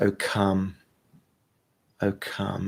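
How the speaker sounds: very slow, soft, breathed-out half-whisper. Leading a breath prayer, breathing out the words: half-whispering. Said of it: "just whispering".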